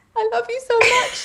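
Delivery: put-on very high-pitched, dramatic little-girl crying voice.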